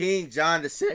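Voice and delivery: voice breaks mid-phrase, jumping high. Reading a passage from Smollett's Critical Review aloud, voice cracking. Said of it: "voice crack".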